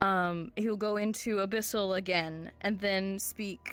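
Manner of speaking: plain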